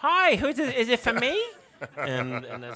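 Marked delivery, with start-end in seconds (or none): 0.0-1.4 shrill, very loud, high-pitched, belted put-on voice. Answering a phone call from grandchildren, Mike Wazowski voice. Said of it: "so I had to talk like that".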